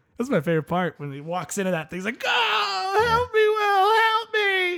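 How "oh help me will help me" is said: mock childlike wail, very high and drawn out. Retelling a scene where an officer screams for the sheriff: imitating a screaming officer. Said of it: "screams for his sheriff's help like a small child".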